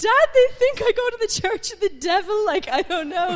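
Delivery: put-on, very high, loud, tearful crying voice. Retelling a tearful call to dad from the dorm, imitating own crying. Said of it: "and I'm in tears".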